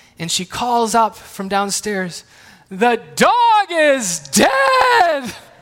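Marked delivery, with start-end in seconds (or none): 2.7-5.3 very slow, high, loud crying wail, stretched long. Retelling a daughter calling upstairs about a movie: imitating Emmeline crying out. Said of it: "And she's crying".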